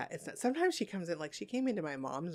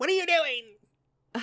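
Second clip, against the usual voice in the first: put-on old woman yelling, higher and louder; 9 semitones higher, 10 dB louder than usual. Retelling how grandma catches someone up at night: imitating grandma yelling. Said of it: "my grandma yells at you".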